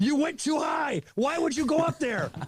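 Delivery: very high, slow, drawn-out put-on yell. Retelling what the company president screamed: imitating someone screaming. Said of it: "big with the company screaming".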